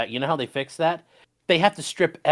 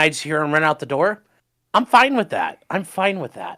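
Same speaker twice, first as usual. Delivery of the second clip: usual speaking voice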